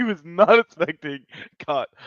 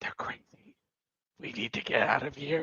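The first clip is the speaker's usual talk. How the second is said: very quiet, hushed, barely voiced whisper; 3 semitones lower, 10 dB quieter than usual. Voicing a character leaning in to another: whispering in character. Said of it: "he's gonna lean in and whisper".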